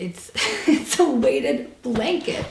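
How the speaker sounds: laughing while speaking. Speaker responds to people's reviews, laughing.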